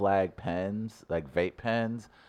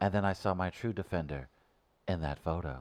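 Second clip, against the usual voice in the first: put-on grown man's voice, quieter; 2 semitones lower, 8 dB quieter than usual.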